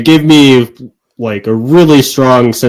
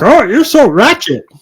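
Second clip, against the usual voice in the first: bad put-on child voice, higher pitched; 13 semitones higher than usual. Retelling how Morgan came home using new slang words: bad Morgan impression. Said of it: "my Morgan impression isn't very good".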